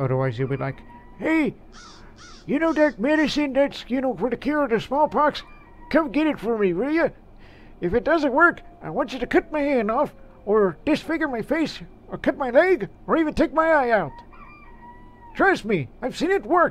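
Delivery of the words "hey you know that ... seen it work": put-on very high-pitched elderly-man character voice. Narrating an Oregon Trail video, the speaker voices a character in an old man voice. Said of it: "That's my old man impression".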